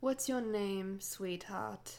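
sickly-sweet voice. Reading a novel aloud, one character questioning another, in a saccharine voice. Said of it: "posed in that saccharine voice".

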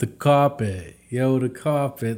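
put-on New York accent. Critiquing an actor's line, showing the New York way to say it, New York accent. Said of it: "the whole New York side of that accent".

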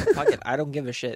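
ordinary delivery

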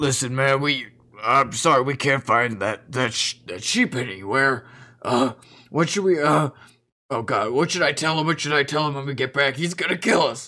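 orc character voice. Voicing an orc worried about failing to find a sheep: orc voice. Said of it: "you're gonna overhear a".

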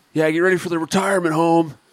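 shrill, very high, loud taunting yell. Retelling what a fighter's buddy yelled at the face-off: imitating someone yelling. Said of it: "first thing he yelled is".

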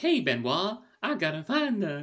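put-on high-pitched, slow, laid-on southern accent. Imitating how the character Helen talks: imitating Helen's southern accent. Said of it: "She talks like this".

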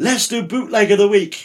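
clumsy, bad put-on French accent, pitched high. Quoting the French radio producer who came to be your director, in a bad French impression. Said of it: "bad French impression here".

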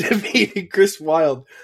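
laughing.

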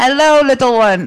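attempted Irish accent. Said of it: "I can't do an Irish accent".

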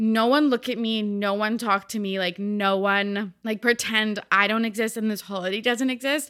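ordinary delivery

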